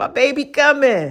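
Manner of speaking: lovesick, head-over-heels lovestruck voice. Retelling how she acted before he came over: imitating own lovestruck past self. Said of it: "I used to be like".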